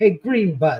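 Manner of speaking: mock shout, taunting, called from a distance. Telling a story, speaker repeats what a bigger boy yelled at him, retelling a yell. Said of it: "And he yelled".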